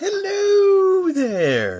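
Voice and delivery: very high, loud, sing-song voice, hello stretched out. A medium greeting viewers, opening with a very poor Mrs. Doubtfire impression. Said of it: "my very poor impression of Missus Doubtfire".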